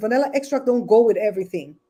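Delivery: normal talking voice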